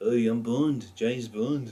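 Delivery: loud, slow, laid-on Liverpool accent. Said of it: "the Beatles British accent".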